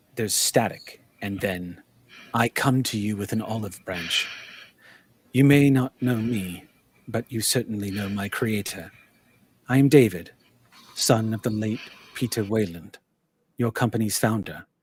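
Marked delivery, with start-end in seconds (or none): 2.3-14.6 put-on calm soothing android voice. Playing an audio recording of the android David: soothing voice. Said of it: "you hear a soothing voice say".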